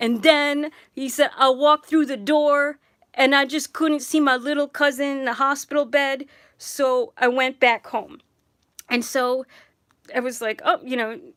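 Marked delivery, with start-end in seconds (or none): 1.4-8.2 put-on big tough-guy accent and voice. Speaker retelling a big guy's apology to his cousin Jess, Rocky accent. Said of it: "in his Rocky accent".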